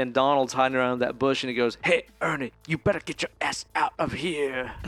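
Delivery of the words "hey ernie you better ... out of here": put-on menacing tough-guy voice. Retelling what a man hiding behind a bush said to a kid, in a creepy thug voice. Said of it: "like creepy thug voice".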